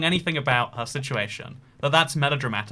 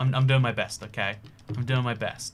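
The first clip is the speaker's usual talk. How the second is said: usual speaking voice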